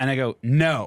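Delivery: ordinary talk, nothing marked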